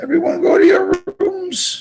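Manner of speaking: voice cracking up high.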